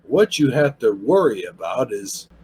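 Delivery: low, slow, snobbish critic voice. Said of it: "Kind of a snobbish type voice".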